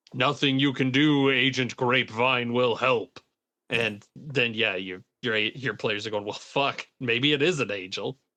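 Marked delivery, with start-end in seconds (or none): 0.1-3.1 grand, otherworldly, booming, resounding voice. A game master recounts an indescribable figure of light speaking in a video, booming voice. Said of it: "that booming voice saying like".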